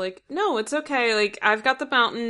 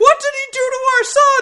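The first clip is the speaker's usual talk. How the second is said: imitated scream, higher and louder; 8 dB louder than usual. Retelling a scene where a character screams about his son: imitating someone screaming. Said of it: "this is where he's screaming".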